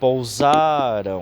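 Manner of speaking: pousaram with middle syllable sa stressed. Portuguese grammar lesson on paroxytone words: stress on middle of 'pousaram'. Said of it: "A gente salienta mais, né, o meio da palavra e não o finalzinho dela".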